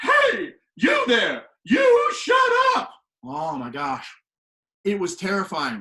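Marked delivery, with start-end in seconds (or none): 0.0-2.9 put-on shrill yell, high, slow and swooping. Retelling a teacher scolding noisy pencils: imitating Battle's battle cry. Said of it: "when you hear Battle do her battle cry".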